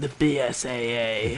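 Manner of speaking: put-on deep, weirdly earnest voice. With a sore throat, imitate how he says his line, in a put-on deep, weirdly earnest voice. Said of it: "I could do that too convincingly deep right now because of my sore throat".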